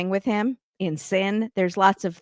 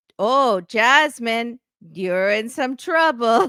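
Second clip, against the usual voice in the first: put-on full Spanish accent, loud and slow; 4 semitones higher, 5 dB louder than usual. Imitating a cast member's new Spanish accent. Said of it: "Just full Spanish accent now".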